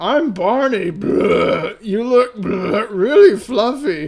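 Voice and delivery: put-on high, loud, very slow, thick drunken slur. Game narrator voices Barney introducing himself in a drunk slurred Barney voice. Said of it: "he slurs with his voice thick with drink".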